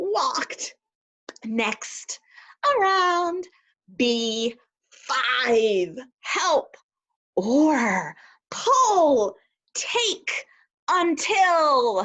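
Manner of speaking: high, cheerful, gleeful, joyful voice, each word stressed. Reading vocabulary words aloud to students: happy voice. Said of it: "I'm going to say them in a happy voice".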